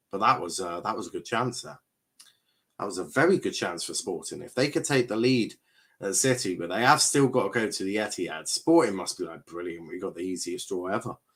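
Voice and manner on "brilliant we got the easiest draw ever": heavily sarcastic, laid on thick. Imitating Sporting's reaction to the draw: mock heavily sarcastic. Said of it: "being heavily sarcastic".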